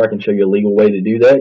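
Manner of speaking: hurried, quick speech.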